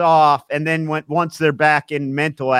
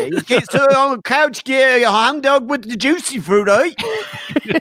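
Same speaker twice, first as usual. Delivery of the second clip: put-on Cockney gangster accent, higher; 9 semitones higher than usual. Joking about how a gangster would describe a bank job: cockney gangster voice. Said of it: "a Cockney gangster would describe a bank job".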